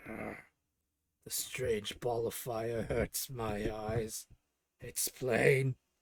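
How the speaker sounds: low, very slow, pained hissing creature voice. Narrating to players, the speaker voices a troglodyte hurt by the sun: hissing creature in pain. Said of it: "As the creature hisses in pain".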